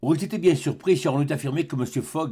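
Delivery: plain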